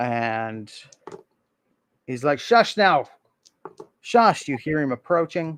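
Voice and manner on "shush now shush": high, soft, shushing put-on goblin voice. Narrator voicing a goblin heard in the stables: goblin voice. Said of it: "You hear a goblin voice in the stables".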